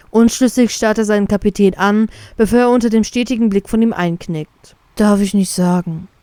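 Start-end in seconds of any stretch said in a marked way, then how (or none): 4.9-6.0 spoken with a sigh. Reading a story aloud, a character refuses to answer his captain: sighing. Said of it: "seufzt der Vize".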